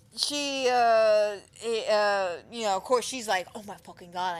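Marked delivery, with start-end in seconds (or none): 3.6-4.4 mock outburst of utter panic. Retelling a character's reaction to a news broadcast: imitating someone panicking. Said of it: "she's panicking".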